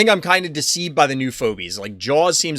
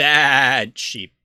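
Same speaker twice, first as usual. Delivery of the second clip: super obnoxious, drawn-out "bad", laid on thick. Saying a name the way it must be said every time, super obnoxious. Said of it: "Gotta be super obnoxious about it".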